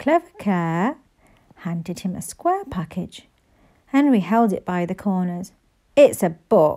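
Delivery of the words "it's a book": groaning, lower pitch, louder, slower. Henry holds a guest's wrapped present by the corners, groaning. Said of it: "he groaned".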